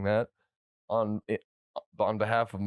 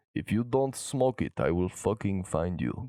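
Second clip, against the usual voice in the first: put-on Russian accent. Threatening another speaker over smoking, Russian accent. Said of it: "Mister Russia Man".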